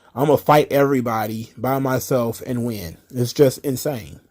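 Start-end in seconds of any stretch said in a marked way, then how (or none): none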